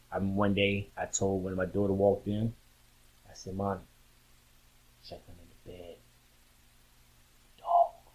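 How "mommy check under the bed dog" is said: quiet, hushed whisper under the breath. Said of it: "why are you whispering?".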